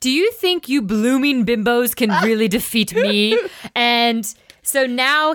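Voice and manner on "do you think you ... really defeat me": mocking villain voice through laughter, laughing. Voicing Castor taunting the heroes after a failed attack: laughing villain taunt. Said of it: "Castor laughs and he's like".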